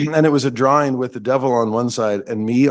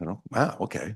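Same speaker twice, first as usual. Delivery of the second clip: plain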